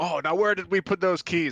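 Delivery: loud, high, blatantly fake innocent tone. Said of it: "And I wink, like, super obvious".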